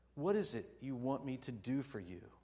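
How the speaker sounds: tender, kindly, soft, gentle voice. Telling the story, Jesus walks over to a man crying out and softly asks. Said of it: "softly asks".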